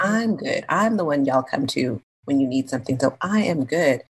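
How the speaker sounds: normal talking voice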